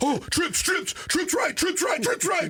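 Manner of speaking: anxious, very high-pitched, nervous yelling. Imitating the linebacker he did not fear, the one who yelled: imitating a nervous linebacker yelling. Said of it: "the guy that yelled".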